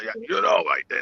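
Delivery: breathy, airy, near-whispered voice. Retelling what Pop answered when asked about a fight: imitating Pop's voice. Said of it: "that voice you just did".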